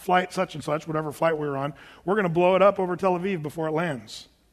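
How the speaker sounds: ordinary delivery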